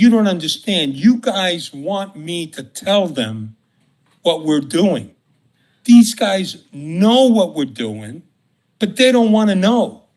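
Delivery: play-acted, irritated, put-out, a bit angry. Retelling what a contact said about the dirty cops: imitating someone saying it angrily. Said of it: "the guy kinda said it, like, kinda angry".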